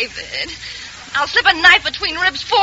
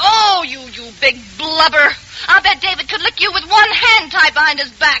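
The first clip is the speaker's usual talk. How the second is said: heated, taunting, angry raised voice. In a drama, Ann speaks to a man during a quarrel; raised voice. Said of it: "you're raising your voice".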